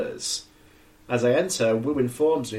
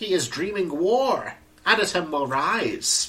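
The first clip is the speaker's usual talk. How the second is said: very slow, drawn-out, high skeleton voice; 7 semitones higher than usual. Reading aloud a phrase written on a living room wall, in a skeleton voice. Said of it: "Why do you read that, like, skeleton?".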